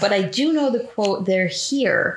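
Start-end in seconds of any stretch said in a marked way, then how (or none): none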